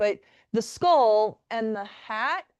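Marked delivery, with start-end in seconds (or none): 1.8-2.4 "hat" with a rising, unsure questioning tone. Not sure of the word, saying it with a rising question inflection on 'hat'. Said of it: "I say hat with a question mark inflection because I'm actually not sure".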